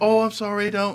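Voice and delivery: small, meek, timid, mouse-like little voice. Describing a show's preview and imitating the actress: imitating a very mousy voice. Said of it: "very, very mousy".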